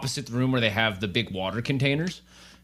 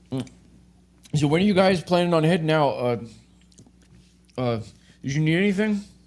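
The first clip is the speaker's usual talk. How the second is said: pitched-up talk around a mouthful of food; 5 semitones higher than usual. Acting out a man waving you guys over while eating, talking with mouth full. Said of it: "waves you over with his mouth full of food".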